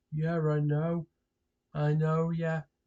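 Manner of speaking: flat, bored, droning monotone. Imitating people who answer with the same bored reply: imitating a bored monotone. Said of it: "the same bloody monotone voice".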